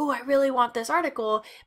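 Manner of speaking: plain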